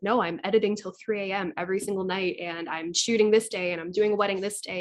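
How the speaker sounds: usual speaking voice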